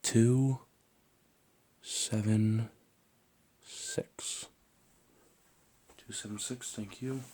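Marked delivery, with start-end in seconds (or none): 0.0-4.4 voiced stage whisper. Half-whispering numbers in each ear for a hearing check: half-whispering. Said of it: "I'm just gonna whisper a few words".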